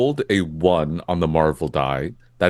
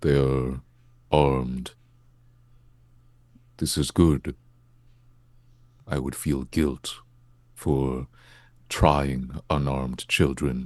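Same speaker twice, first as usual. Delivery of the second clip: muttering quietly under breath, lower and quieter; 4 semitones lower, 5 dB quieter than usual. Speaking in character, noting the opponents are armed: muttered under breath. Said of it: "under my breath".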